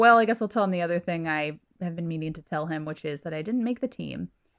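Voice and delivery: plain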